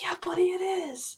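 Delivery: gentle, high, soft whisper. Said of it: "And I'm like".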